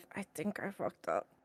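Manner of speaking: low, muttered whisper, half to oneself. In a group roleplay, the player voices Syra: whispering under her breath. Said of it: "whispering under her breath".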